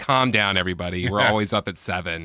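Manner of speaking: ordinary talk, nothing marked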